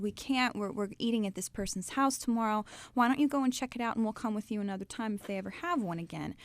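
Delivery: plain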